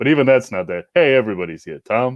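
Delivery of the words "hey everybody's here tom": deep, heavy bass voice. Trying out a movie character voice that is hard to imitate: Alex Rocco impression, bass sound. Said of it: "It's just this sort of like bass sound".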